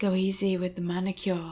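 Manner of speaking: seductive. Narrator reads a drugged woman speaking as she lapses into unconsciousness, sexy. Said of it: "she says sexily".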